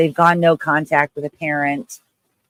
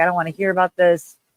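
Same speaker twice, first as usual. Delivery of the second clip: put-on angry voice, higher; 3 semitones higher than usual. Retelling how the father reacted to talk of therapy: imitating an angry father. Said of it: "he just got so mad".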